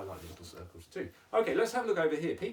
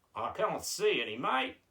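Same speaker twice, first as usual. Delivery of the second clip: put-on Australian accent, much higher; 2 semitones higher than usual. Answering his own question about a circle, in an Australian accent. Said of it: "you're going with the Australian accent".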